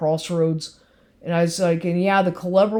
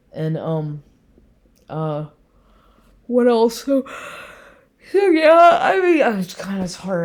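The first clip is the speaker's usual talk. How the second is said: slow speech drawn out through a yawn. Documenting the day's events, the speaker keeps talking: yawning while talking. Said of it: "I'm sorry, I'm yawning".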